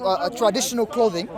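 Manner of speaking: plain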